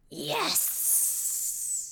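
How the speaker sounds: whispered, hissing through gritted teeth. A character leaning in close to her companion, hissed through teeth. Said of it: "just hisses through her teeth".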